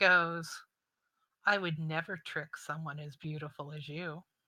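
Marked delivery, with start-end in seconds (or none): 1.4-4.2 smug, self-satisfied, self-assured tone. Voicing a fae who answers a threat, smirking. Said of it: "he kind of smirks at you".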